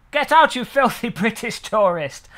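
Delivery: odd fake southern English accent. Imagining ordering in Italy, the speaker plays the waiter: weird southern British accent. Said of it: "the waiter talks with a weird southern British accent".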